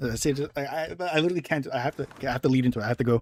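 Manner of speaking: ordinary delivery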